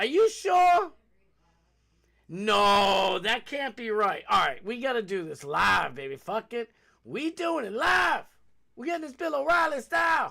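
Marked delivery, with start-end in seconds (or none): 6.2-10.3 shouting, higher. Deciding to check the fact live and getting worked up: yelling. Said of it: "I'm yelling, I know".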